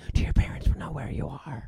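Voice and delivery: put-on hushed whisper. Retelling a scene together with a friend, imitating a hushed whisper. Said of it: "in like a hushed whisper".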